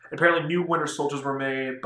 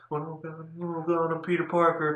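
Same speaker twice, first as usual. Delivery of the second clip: mumbling, stumbling ramble, tripping over the start; 4 semitones higher than usual. Retelling a movie scene, imitating the character mumbling: mumbling like Peter Parker.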